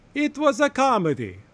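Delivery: fake Italian accent, high. Mocking what a movie's defenders will say, the speaker uses a put-on offensive accent. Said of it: "now I'm doing the offensive accent".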